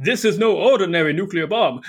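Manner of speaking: laid-on put-on vampire character voice. Trying the vampire voice again on exposition lines: put-on vampire voice. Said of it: "I'm going to try to do my vampire voice again".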